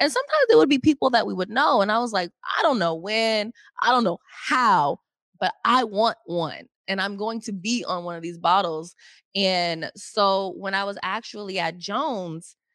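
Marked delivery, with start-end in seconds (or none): none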